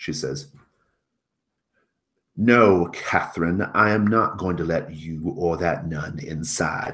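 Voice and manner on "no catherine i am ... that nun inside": loud, raised, angry heated voice. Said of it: "having an argument".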